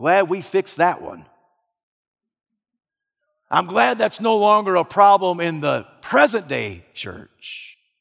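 dripping sarcastic, swooping sing-song tone. Speaking about the church's ongoing sexual ethic issue, sarcastic. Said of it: "You sense the sarcasm dripping from my lips".

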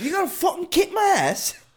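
put-on very high, shrill, sing-song, swooping yelled British accent. Trading jokes with friends, one speaker challenges another: Gordon Ramsay-style British accent. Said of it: "Why does everybody sound like Gordon Ramsay?".

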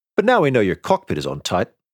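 ordinary delivery

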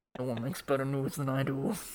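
muffled, smothered, boastful voice. Joking about a phone recording from a pocket: muffled Trump voice. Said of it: "Muffled Trump voice".

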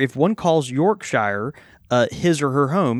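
ordinary delivery

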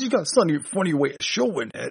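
cartoon character voice, done badly. Retelling a line from a cartoon about a dumped character: bad Thing voice. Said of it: "If that was a better thing voice".

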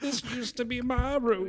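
put-on very high, very soft, doddering old lady voice. Describing a character in a show, the speaker quotes her: imitating a doddering old woman. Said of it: "she's like doddering around like".

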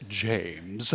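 slight, low, soft English accent.

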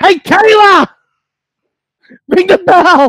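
very high, stretched-out ring-announcer yell. Imagining an official ring announcer calling out: imitating Kayla screaming. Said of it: "And she screams".

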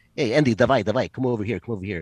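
weak put-on Ukrainian accent. Retelling a guy at a bar calling him over, in a bad Ukrainian accent. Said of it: "I can't do a good Ukrainian impression".

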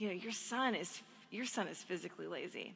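put-on joking tone. A parent retells what a swimming teacher said after a lesson, retelling a joking remark. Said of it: "jokingly said to me".

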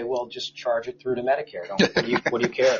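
put-on flat, deadpan delivery. Retelling how judges would answer a worker's question, mimicking a judge's deadpan.

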